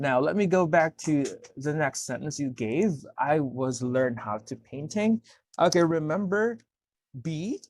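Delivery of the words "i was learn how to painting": usual speaking voice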